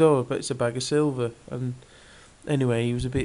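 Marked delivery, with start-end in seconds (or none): none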